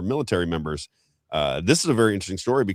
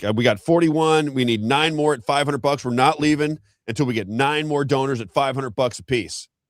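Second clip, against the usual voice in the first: put-on high, childish voice like a twelve-year-old; 6 semitones higher than usual. Retelling a social media clip of a fundraiser: imitating Bill Pulte sounding like a twelve-year-old. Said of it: "he sounds like a twelve-year-old".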